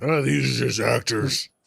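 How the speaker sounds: rough, creaky character voice. Quoting a show host's claim about mass events: imitating Alex Jones. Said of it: "you're not using the right, uh, the, the voice there".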